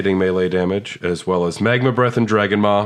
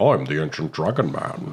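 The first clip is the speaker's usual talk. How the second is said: put-on Scottish accent, lower and quieter; 4 semitones lower, 4 dB quieter than usual. Joking that Sean Connery plays the Ancient Dragon Man: Sean Connery voice. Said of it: "It's played by Sean Connery".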